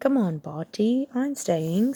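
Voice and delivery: sunny, bright, cheerful and unhurried. Reading a story aloud, a character urging another to stay: bright. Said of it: "said Bagman brightly".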